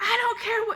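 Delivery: put-on yelling. Retelling how a boss answered a question, imitating someone yelling. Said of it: "she's yelling at me".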